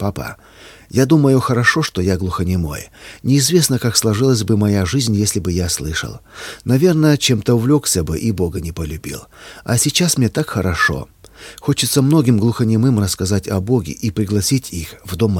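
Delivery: ordinary delivery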